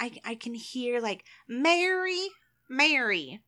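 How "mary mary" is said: strong Southern accent, much higher. Working out how a name would sound, trying a strong Southern accent. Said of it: "really strong, like, Southern accent".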